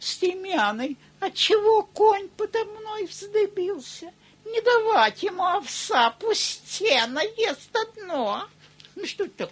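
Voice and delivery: put-on strange, very loud, slow childlike voice. Imitating a man who talked to his own necktie, odd childlike voice. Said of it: "каким-то непонятным детским голосом".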